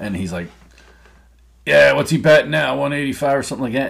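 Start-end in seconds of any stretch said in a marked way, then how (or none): 1.7-3.9 mocking, loud, pitched-up sarcastic shout. Retelling what a guy yelled across the bar: imitating a sarcastic yell. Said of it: "the guy was being sarcastic".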